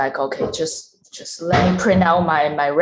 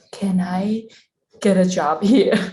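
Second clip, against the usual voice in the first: put-on sweet, innocent, naive, slow, little voice; 3 semitones higher than usual. Retelling asking a manager for a job, imitating own naive cute asking. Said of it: "I like the tone".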